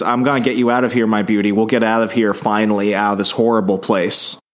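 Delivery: ordinary talk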